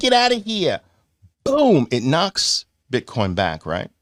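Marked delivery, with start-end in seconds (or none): 0.0-0.8 very high-pitched voice with a New York accent. Speaker voicing the twenty knocking Bitcoin back, in a New York accent. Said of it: "That's my uh, my New York accent".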